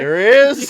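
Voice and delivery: trembling, shrill, frightened, very high and very loud. Reacting to hearing that a meme exists: shaky, scared-sounding voice. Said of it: "You said that so shakily, like you're scared".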